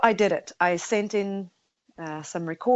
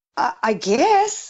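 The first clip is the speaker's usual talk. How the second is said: put-on bewildered, dumbfounded, halting and faltering; 3 semitones higher, 4 dB louder than usual. Retelling being asked if excited: retelling own dumbfounded reply. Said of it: "I was completely dumbfounded".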